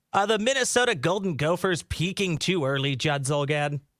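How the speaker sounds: bold, big East Coast sports-radio bravado voice. Asking a very traditional sports question in a big-time East Coast radio voice. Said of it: "I'll do it in my uh, big time East Coast radio voice".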